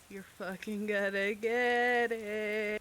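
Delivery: unhinged, crazed, spoken through laughter. After a death in the story, the character stares at him: crazed laughing threat. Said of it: "I'm just laughing like as I stare at him".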